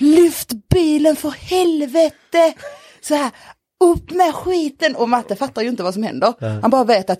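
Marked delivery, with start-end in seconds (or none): 0.0-5.0 acted-out panicked shout, high, very slow and stretched. Retelling getting stuck and shouting to the other person, retelling a scream. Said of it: "jag skriker på Matte".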